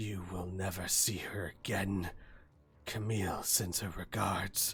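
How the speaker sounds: quiet, soft, drawn-out hiss through the teeth. Narrating a fight, voice the attacker's line in a soft hissing voice. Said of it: "this soft hissing voice".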